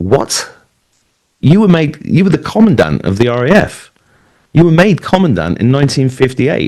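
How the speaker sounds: incredulous, high-pitched disbelief. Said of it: "And I was".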